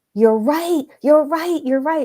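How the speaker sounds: put-on high, screaming burst. Retelling a phone call where a brother answered, imitating him screaming. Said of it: "he was screaming".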